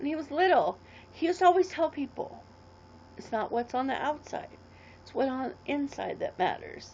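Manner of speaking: teary, emotional voice, speaking through tears. Speaker recalling what he always told people when little, tearing up. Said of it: "sorry for tearing up".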